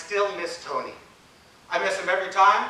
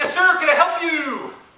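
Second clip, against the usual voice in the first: put-on very high, raised, loud calling-out voice; 9 semitones higher, 5 dB louder than usual. Retelling how a receptionist called out across a crowded office: imitating someone yelling out. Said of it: "yelled out".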